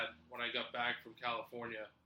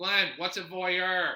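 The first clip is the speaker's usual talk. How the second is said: raised, loud, pitched-up calling voice; 7 semitones higher, 7 dB louder than usual. Retelling a coworker's question at work, in a loud Dylan Walsh voice. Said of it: "says it loudly, kind of like in a Dylan Walsh voice".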